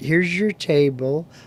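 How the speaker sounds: patronizing, condescending, talking-down tone. Imitating patronizing talk some people give older folks: mock-condescending tone. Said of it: "that patronizing, condescending speech that some people like to give older folks".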